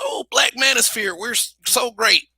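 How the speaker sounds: put-on shouting manner, held in, mild. Retelling what a guy in the space shouts: imitating someone shouting. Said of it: "dealing with the guy who shouts".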